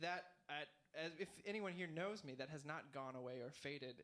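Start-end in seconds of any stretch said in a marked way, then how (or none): none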